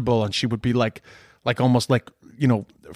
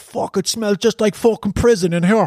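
put-on Cork accent, pitched up; 9 semitones higher than usual. Retelling what a visitor in the building once said, in a Cork accent. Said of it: "saying in a Cork accent".

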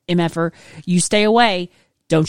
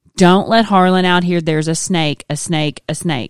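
plain

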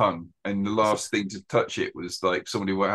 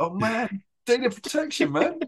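put-on screaming, pitched higher; 14 semitones higher than usual. Retelling a reaction to a scene with a laptop tracker: imitating own past screaming. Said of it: "I was just screaming".

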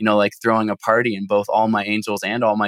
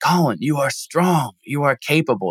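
put-on firm, half-called out, yelling at top of lungs; 4 semitones higher than usual. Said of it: "Just yelling this at the top of my lungs".

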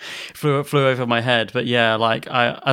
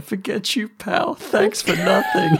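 crying words, very high, wobbling and swooping; 11 semitones higher than usual. Retelling a cartoon scene where he leaves crying: imitating someone crying. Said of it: "is crying when he leaves".

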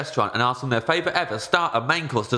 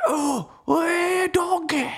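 put-on Scottish accent, higher pitch. Joining in on the other speaker's bit: put-on Scottish accent. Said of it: "and then you've done yours".

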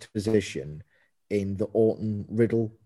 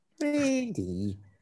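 put-on whiny voice, pitched much higher; 14 semitones higher, 4 dB quieter than usual. Mocking how Riddle calls out to Randy, in Riddle's whiny voice. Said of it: "Riddle's whiny voice".

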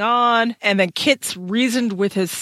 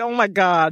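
full-on whiny, complaining voice. Acting out a book character's line: imitating whining. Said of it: "He's just whining here. He's like".

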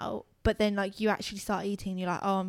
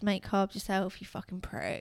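imitated annoyed tone, quieter; 5 dB quieter than usual. Retelling own annoyed reply about making carbs: imitating own annoyed retort. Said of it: "I was annoyed".

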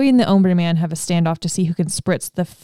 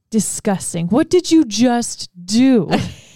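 slow, drawn-out delivery with sitcom cadence; 3 semitones higher than usual. Retelling a TV scene where everyone is grossed out: Chandler cadence. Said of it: "There's our Chandler cadence".

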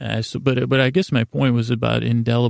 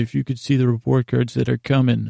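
ordinary talk, nothing marked

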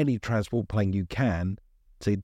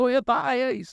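very high-pitched shout; 4 dB louder than usual. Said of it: "he's just shouted, he shouted".

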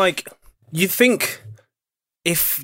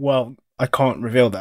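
ordinary delivery

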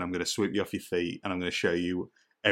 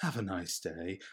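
put-on creepy creature voice, much quieter; 9 dB quieter than usual. Recalling favorite Ood lines with a friend, doing a creepy Ood voice. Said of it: "in the creepiest way".

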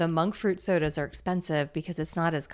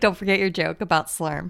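ordinary delivery

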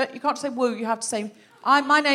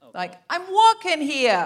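put-on New York Italian accent; 3 semitones higher, 3 dB louder than usual. Suggesting how to pitch an Italian accent for a role, in a New York Italian accent. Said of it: "You can either do New York Italian".

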